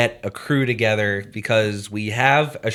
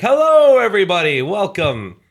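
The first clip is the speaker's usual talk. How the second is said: put-on big booming voice, very high, swooping; 9 semitones higher, 6 dB louder than usual. Showing how they open club meetings as the main voice, in a booming voice. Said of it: "I'd use like this booming voice that everyone says I have".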